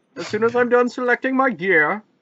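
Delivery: high comic-book villain voice. While playing a game, a player taunts another in a Bane voice. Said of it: "You're so Bane".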